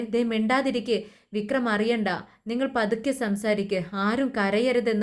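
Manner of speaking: plain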